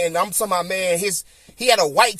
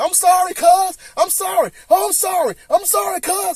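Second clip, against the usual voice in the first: put-on pleading tone, higher; 12 semitones higher, 3 dB louder than usual. Retelling a fight where the beaten opponent kept apologizing: imitating someone apologizing. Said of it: "he was apologizing".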